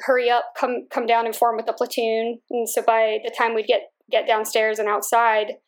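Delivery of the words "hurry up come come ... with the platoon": normal talking voice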